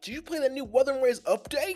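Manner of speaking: put-on very high, very loud, shrill, hyper anime kid voice. Imitating how an excitable anime kid would ask about a game update: imitating an excitable anime kid. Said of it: "they be making the kids in anime so excited".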